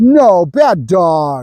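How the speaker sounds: stern, chastising, scolding tone. Showing the tone used to tell a dog off: chastising tone. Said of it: "Chastised tone".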